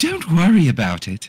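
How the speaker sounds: put-on British maid voice, camp female tone. In a role-play, replying to an apology, British housemaid voice. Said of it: "becoming a fucking, like, British housemaid".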